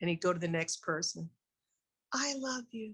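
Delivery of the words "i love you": saint-like, beatific, pitched-up manner. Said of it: "like a saint".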